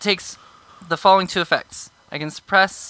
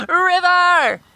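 very high-pitched, long-held, drawn-out scream; 11 semitones higher than usual. Presenting a holy symbol, a character screams out one word, screaming. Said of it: "I present my holy symbol and I scream".

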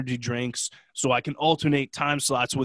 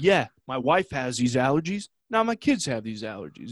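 mildly irked, grumbling, kind of angry. Retelling a conversation, the speaker quotes a man, kind of angry. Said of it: "he sounded kind of angry while he said it".

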